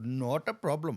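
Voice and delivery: Indian-accented English. Showing the other speaker the accents he can do, in an indian accent. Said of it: "or I can do an Indian guy".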